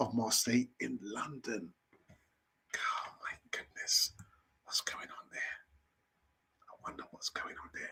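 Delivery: fast, hushed, rattled-off whispered aside. Reading a news segment alone and wondering aloud about it, whispering. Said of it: "I don't know why I'm whispering for".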